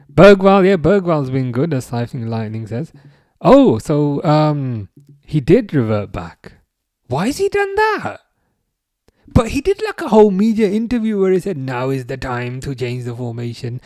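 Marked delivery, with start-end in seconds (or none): 11.6-13.8 put-on German accent. Quoting Bergwall's media interview, in a German accent. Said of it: "I don't know why I did a German accent".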